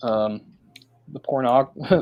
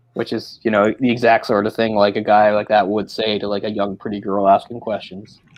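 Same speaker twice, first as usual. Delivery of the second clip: normal talking voice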